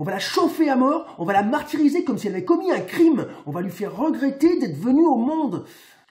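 swept-along, worked-up tirade. Speaking just before you stop and excuse yourself for it, getting carried away. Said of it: "je me suis emporté".

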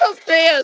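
spoken while laughing.

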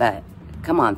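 plain

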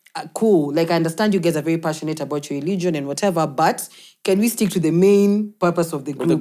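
ordinary talk

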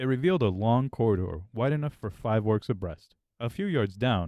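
plain

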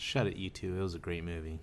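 low, soft, menacing voice. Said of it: "That sounded menacing".

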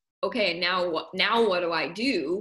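ordinary talk, nothing marked

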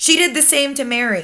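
ordinary delivery

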